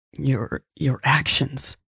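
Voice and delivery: croaked words. Louise answering Michelle about whether change is real, croaking. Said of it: "she croaked".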